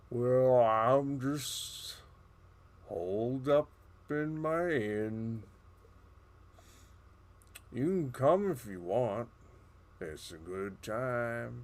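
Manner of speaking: put-on stoned, spaced-out turtle voice, sounding high. Voicing Marley the turtle inviting the party to his inn: stoned Marley the turtle voice. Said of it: "He sounds high".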